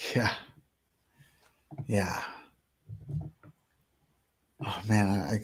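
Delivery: voice catching with emotion. Reacting to news of a boy given an adaptive bike, choked up. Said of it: "sorry, I get kinda choked up".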